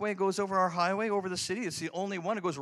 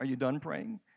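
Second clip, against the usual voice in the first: hushed whisper; 5 semitones lower, 3 dB quieter than usual. Retelling a voice heard after praying: imitating a whisper. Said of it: "I'd hear this whisper".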